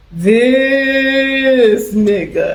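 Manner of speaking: long, drawn-out "this", then landed firmly. Quoting a part of a comedy special: Yvonne Orji impression. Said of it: "she used to go".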